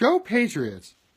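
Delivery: enthusiastic cheer.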